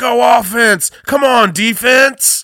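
very high, very loud, shrill, drawn-out cheering scream. Retelling a woman in a Saints jersey cheering from half-empty stands, screaming as loud as possible. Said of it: "she's screaming like as loud as she can".

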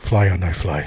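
deep assumed voice. Picturing someone as Miyagi and acting out his line in a Miyagi impression. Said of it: "picturing Don as a Miyagi, and he's going".

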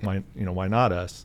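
normal talking voice

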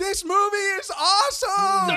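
put-on very high, very slow, loud, drawn-out kid gush. Retelling a kid standing up during a movie: imitating a nine-year-old kid. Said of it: "his son literally standing up during the movie and going".

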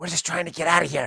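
whispered, put-on character voice. Whispering in a companion's ear, trying to get out of here: whispering in character. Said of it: "just kind of whisper in his ear".

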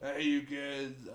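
put-on strict, stoned father voice. Asked to be a stern stoner father, the speaker tries it: stern stoner father voice. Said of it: "A stern stoner father?".

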